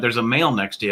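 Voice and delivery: ordinary talk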